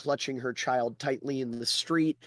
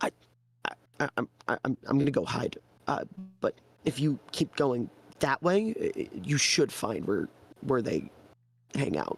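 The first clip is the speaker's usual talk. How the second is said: whispered, stammering speech. Voicing a villager who catches himself and decides to hide, stammering whisper. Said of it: "and then he whispers".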